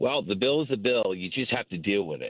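put-on snobbish, elitist voice. Retelling what a senator said about the bill, mock-elitist senator impression. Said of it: "can you sound any more elitist".

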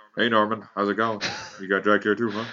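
early cartoon father voice. Asked about the names Homer shouted out, answering in a season one Homer impression. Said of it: "That's a really good impression of season one Homer".

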